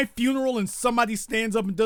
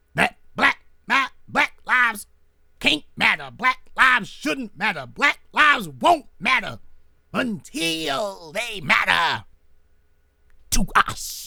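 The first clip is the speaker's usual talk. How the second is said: outrageously ostentatious, dramatic Southern preacher cadence. Imitating a speaker with a dramatic southern preacher intonation. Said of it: "that Southern preacher, outrageously ostentatious, dramatic intonation".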